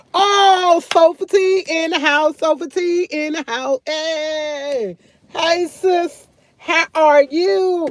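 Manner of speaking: very slow, high, drawn-out hey. Greeting sis, who has just shown up, speaking loudly. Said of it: "Girl, I'm so loud".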